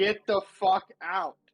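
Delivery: high, loud yelling. In a tabletop game, a player's character yells at others to get out, shouting in character. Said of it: "and then I will also shout".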